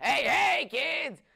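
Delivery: barked delivery, high and loud. Describing a group as a bunch of clowns: Krusty the Clown voice. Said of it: "horrible, golly awful impression of Krusty the Clown".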